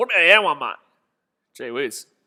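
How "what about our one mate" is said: put-on broad Australian accent, laid on thick. Repeating a fan's complaint heard during the match: imitating a strong Australian accent. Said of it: "that was an Australian accent and a half".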